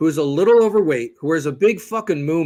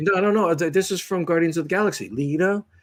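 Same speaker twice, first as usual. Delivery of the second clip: plain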